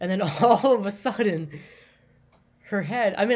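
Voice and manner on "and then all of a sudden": loud, laughing delivery, cracking up mid-sentence. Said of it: "I'm, I'm laughing".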